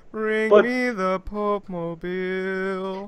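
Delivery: loud, booming, very slow, with "Mobile" drawn out. Joking about how the Pope talks: imitating the Pope. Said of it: "that's exactly how the Pope talks".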